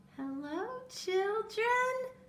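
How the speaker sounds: gentle, sugary tone. Reading a storybook character greeting the children, in a sweet voice. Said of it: "someone said in a sweet voice".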